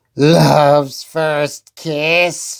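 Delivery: words hissed in a witch voice. Reading a story aloud, the witch reacts to the cure in her book, hissing witch. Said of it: "she hissed".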